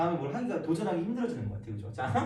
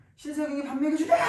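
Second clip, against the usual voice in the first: put-on fed-up yell, very high, loud, furious; 11 semitones higher, 6 dB louder than usual. Retelling an angry outburst at a crowd, imitating himself shouting angrily. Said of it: "찐으로 열받아가지고 진짜 소리 질렀거든요".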